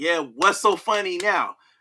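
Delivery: put-on, taunting voice with laughter. Retelling how Ricochet laughed while beating someone: imitating Ricochet laughing while taunting. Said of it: "and he start laughing".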